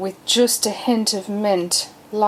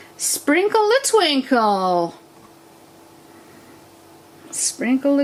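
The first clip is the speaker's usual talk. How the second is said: bad put-on American accent, sing-song; 6 semitones higher than usual. Sprinkling glitter from a salt and pepper pot, in a pathetic put-on American accent. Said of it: "That's my pathetic American accent".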